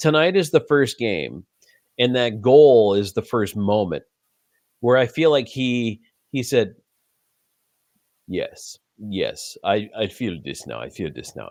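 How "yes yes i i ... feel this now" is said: soft put-on generic Russian accent. Voicing what a hockey player seemed to say after his first goal, in a generic russian accent. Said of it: "I'm just doing a generic Russian accent here".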